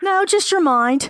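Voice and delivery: playful teasing. Answering the other person's question about anything else to worry about, teasing. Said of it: "I'm teasing you".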